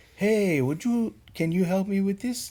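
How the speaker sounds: put-on Spanish accent, very high pitched. Imagining a colleague asking an eighty-year-old patient for help, imitating Maurice's accent. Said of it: "And and like in his accent".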